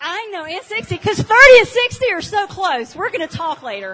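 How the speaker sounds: ribbing, teasing. Speaking to a young woman in the audience after she gives her age, teasing. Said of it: "I'm teasing you, honey".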